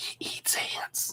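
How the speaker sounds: very quiet, hushed, breathy, confiding whisper. Retelling what a teacher said about a child: imitating a whisper. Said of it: "She leans in real close and whispers".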